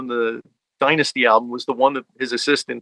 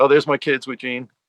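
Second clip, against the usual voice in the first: ordinary talk, nothing marked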